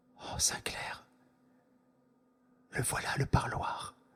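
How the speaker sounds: very soft, hushed whisper, barely above breath. A narrator reads a man speaking very quietly to Sainclair: very quietly. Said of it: "tout bas, plus bas encore qu'il ne m'avait parlé".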